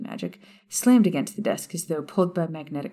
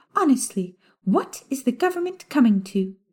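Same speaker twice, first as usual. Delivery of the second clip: saccharine, sickly-sweet, high sugary voice; 8 semitones higher than usual. A prim official speaks to a young listener, complaining about the authorities' failings, in a sugary high-pitched voice. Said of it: "a variety of pink shades in the form of a short toad-like witch who stood unassumingly in [name]'s doorway with a stack ... A high-pitched, sugary voice interrupted [name]'s thoughts".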